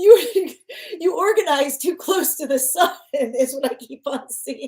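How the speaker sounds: talking through laughter. Speaker giving advice about organizing skills: laughing while talking. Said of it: "I'm sorry, I'm laughing".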